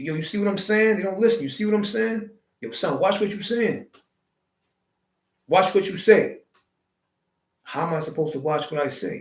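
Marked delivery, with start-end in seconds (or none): 0.0-6.4 high, nonchalant, matter-of-fact slang delivery. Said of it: "we say it so nonchalantly, so matter of fact".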